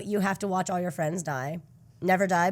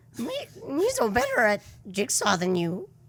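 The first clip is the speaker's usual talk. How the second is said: put-on alien creature voice, higher; 5 semitones higher than usual. Imitating a character mocking someone at a jigsaw puzzle: Jar Jar Binks voice. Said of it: "And he talks like this".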